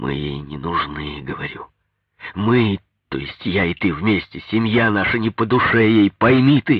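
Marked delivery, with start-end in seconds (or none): none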